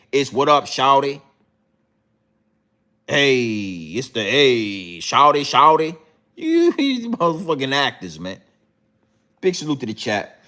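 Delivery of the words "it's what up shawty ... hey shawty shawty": exaggerated, mocking fake American street accent, drawn-out "hey". Speaker mocks British actors switching accents over here, in a mocking put-on American accent. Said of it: "But when you come over here".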